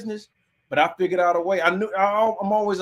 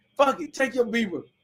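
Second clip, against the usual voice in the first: play-acted, furious, fed-up, dismissive angry outburst; 4 semitones higher than usual. Retelling giving back a beeper she asked for: imitating own angry past words. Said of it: "I was mad as fuck".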